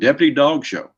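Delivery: put-on acted, high, delighted child's shouted exclamation. Retelling what he would yell as a child when he saw something he liked: imitating his own childhood yell. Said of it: "I would yell".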